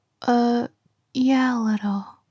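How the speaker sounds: sounding kind of upset. Answering a friend on the phone after losing money: sounding upset. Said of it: "You sound kind of upset".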